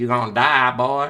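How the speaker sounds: put-on Southern country accent with a Vietnamese edge. Quoting a childhood friend raised in north carolina, in a weird vietnamese country accent. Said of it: "he had a weird kind of a Vietnamese country accent".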